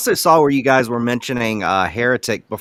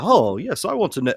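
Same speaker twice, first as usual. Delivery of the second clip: clumsy fake British accent, slightly pitched up; 5 semitones higher than usual. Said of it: "trying to do a bad British accent".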